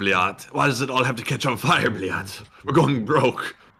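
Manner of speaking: mock fed-up, exasperated, frustrated tone. Voicing a man in the footage: imitating a frustrated man. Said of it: "He sounds so frustrated".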